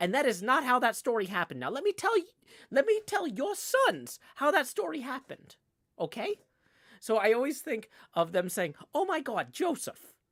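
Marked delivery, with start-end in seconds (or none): 8.9-10.0 high, put-on New Jersey accent. Imagining the grandparents talking, in a put-on New Jersey accent. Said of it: "when I try and get into the New Jersey accent".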